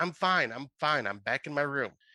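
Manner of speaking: usual speaking voice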